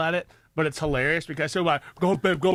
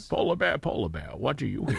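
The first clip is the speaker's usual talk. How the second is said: put-on Scottish movie-star voice, lower pitch; 5 semitones lower, 3 dB quieter than usual. Reading a children's book line aloud in the voice of Sean Connery. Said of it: "read it in the voice of Sean Connery".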